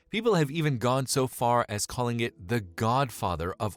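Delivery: ordinary delivery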